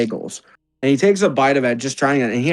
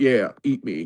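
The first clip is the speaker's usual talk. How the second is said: tempting voice, lower; 3 semitones lower, 4 dB quieter than usual. Voicing a Jell-O that tempts a player to eat it: seductive talking Jell-O. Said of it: "the Jell-O's trying to seduce me".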